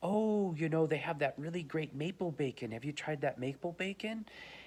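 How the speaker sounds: mock friendly, sweet, nice older-lady voice. Retelling what an older woman in her sixties said to us, imitating a really nice voice. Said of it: "she squeezes it over to us in a really nice voice".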